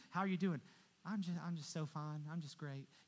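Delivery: weird, fake cheerful, everything-is-great voice. Mimicking Christians pretending they are doing great, in a weird fake voice. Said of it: "I always do these weird voices when I'm talking about Christians saying they're doing great".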